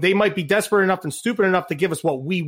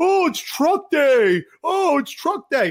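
giddy, drawn-out, very high, sing-song excited gushing; 10 semitones higher than usual. Mocking fans who get excited about truck day: imitating excited fans. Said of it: "And people are going".

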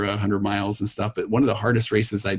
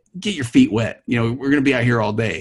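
mock yelled, raised voice; 3 semitones higher, 5 dB louder than usual. Retelling what a runner beside them said during a rainy race: imitating someone yelling. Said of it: "yells at me".

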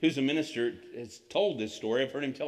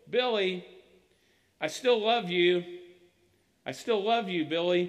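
mock, high-pitched yelling upward; 5 semitones higher, 4 dB louder than usual. Retelling a boy calling up at Billy off the bus: imitating Tommy yelling. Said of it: "he's yelling up at Billy".

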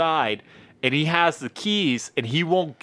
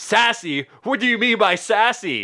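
high, offended, irritated, pissed-off voice; 6 semitones higher than usual. Retelling a coworker's reply after being called sassy: imitating an angry man. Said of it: "he got so pissed off".

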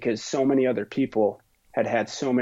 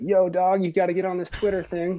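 pitched-up, younger voice of a man in mid-twenties; 8 semitones higher than usual. Quoting a younger brother urging him onto Twitter: impression of a mid-20-something. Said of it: "I like your impression of a mid-20-something".

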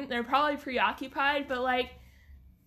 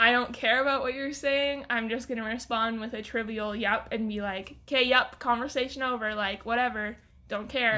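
normal talking voice

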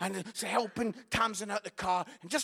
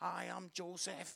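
very quiet, put-on nervous voice; 3 semitones lower, 14 dB quieter than usual. Retelling a nativity play, voicing the boy playing Joseph: imitating a nervous child. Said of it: "He's nervous".

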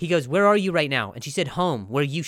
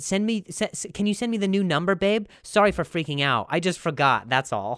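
breezy, offhand, casual, playing-it-cool tone; 4 semitones higher than usual. Acting out a follow-up text: imitating Mel playing it cool. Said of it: "And then she said".

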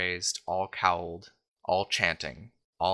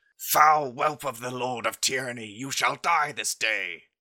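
high-pitched, contained, angelic crying voice; 5 semitones higher than usual. Voicing an angel who screams out in battle: screaming angel. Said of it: "you hear the angel scream out".

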